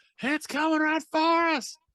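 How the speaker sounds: very high, loud scream. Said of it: "and scream".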